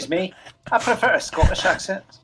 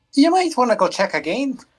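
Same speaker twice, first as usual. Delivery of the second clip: put-on Irish accent, pitched higher; 7 semitones higher, 3 dB louder than usual. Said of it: "we're doing Irish acts now".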